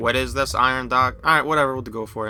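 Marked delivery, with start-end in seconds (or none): 0.0-1.2 put-on mechanical robot-type voice. Trying out a voice for a male figure: robotic voice. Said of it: "Should I do like a robotic type voice? Like".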